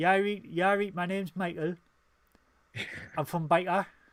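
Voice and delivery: put-on Newcastle Geordie accent. Explaining british regional accents, demonstrating a geordie accent. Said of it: "Geordie is like".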